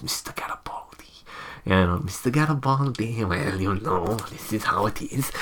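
soft, hushed character voice. Describing a favourite Babylon 5 character and showing how he speaks, Londo Mollari voice. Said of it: "he speaks like this".

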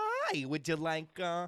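high, friendly put-on man voice. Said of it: "he'd go".

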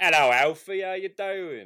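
put-on very loud, high-pitched, belted Cockney accent. Inventing Alfred's brother Randy Pennyworth, greeting Alfie in Randy Pennyworth's Cockney accent. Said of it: "He's like this Cockney accented guy".

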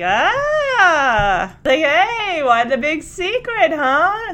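slow, high-pitched teasing, playful ribbing. Retelling how a dad teases his son about a secret: imitating Edward teasing. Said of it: "teasing him".

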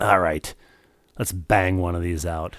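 low, rough, gravelly smoker's rasp. Quoting the boss mama deciding to bang one out, in a gravelly voice. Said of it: "That's a gravelly".

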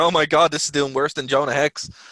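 usual speaking voice

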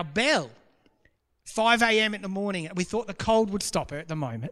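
normal talking voice

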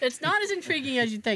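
ordinary delivery

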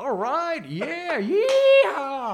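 put-on drunk crowd cheering, high and loud hollering.

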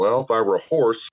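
ordinary delivery

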